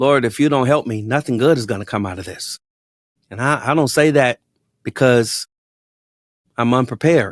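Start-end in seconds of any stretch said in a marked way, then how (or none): 0.0-2.6 put-on muttering under breath. Retelling a prayer said on the way to the pulpit: imitating muttering under breath. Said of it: "I'm muttering under my breath".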